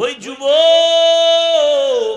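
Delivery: high-pitched, loud, drawn-out calling voice.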